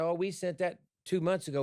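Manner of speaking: ordinary delivery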